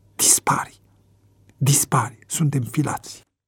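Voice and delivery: spoken with teeth clenched. Jimmy speaks to Ricky as a train pulls in, through gritted teeth. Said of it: "Jimmy îi zise printre dinți".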